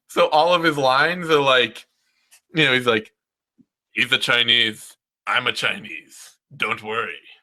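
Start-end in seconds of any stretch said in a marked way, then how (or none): 3.9-7.2 oddly deep, very low speaking voice. Describing a movie character's lines to a friend, imitating his weirdly deep voice. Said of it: "he has this weirdly deep speaking voice in English".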